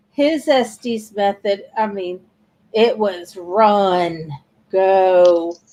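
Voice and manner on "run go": put-on, really deep voice. Retelling the words heard during a spirit session: imitating a really deep voice. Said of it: "he says in a really deep voice".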